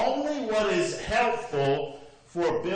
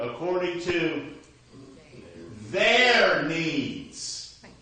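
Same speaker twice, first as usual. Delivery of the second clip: strong, heavy stress on "their". Pointing out where emphasis goes in a phrase: strong stress on their. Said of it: "There's an emphasis there we need to put".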